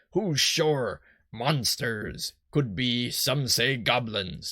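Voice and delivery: generic put-on pirate voice. A character wonders why the lighthouse light went out, generic pirate voice. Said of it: "I guess I'll just do my generic pirate".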